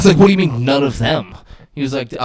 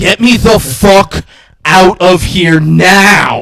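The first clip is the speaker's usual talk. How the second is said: put-on panicked heavy breathing, louder, much slower; 5 semitones higher, 5 dB louder than usual. Retelling a man panicking in the front seat, imitating fast, heavy breathing. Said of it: "He's breathing fast and heavy".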